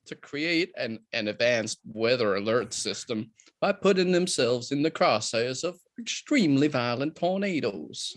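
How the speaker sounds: slow, stretched-out southern US drawl. Reading a film synopsis aloud in a southern drawl. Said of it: "try the southern drawl".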